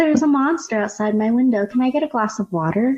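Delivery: acted, perfectly placid, unbothered, matter-of-fact delivery. Performing a film character's line on request: imitating an absolutely calm delivery. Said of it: "she says this in the absolute calmest way possible".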